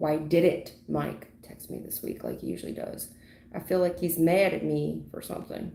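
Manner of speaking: ordinary talk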